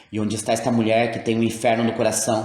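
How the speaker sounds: ordinary delivery, nothing marked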